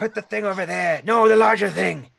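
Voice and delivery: shouting. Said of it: "he's yelling".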